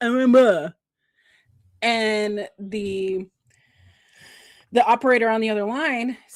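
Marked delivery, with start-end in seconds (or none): 0.0-0.7 loud, play-acted garbled mumble with mouth full. Retelling an ad where a caller answers with peanut butter in his mouth: imitating talking with mouth full. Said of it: "he's got his peanut butter in his mouth".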